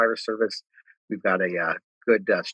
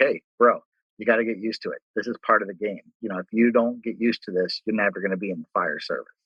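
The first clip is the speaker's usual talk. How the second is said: put-on teasing, mocking voice. Retelling how a captain reacted to being upset: imitating someone mocking. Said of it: "starts making fun of me".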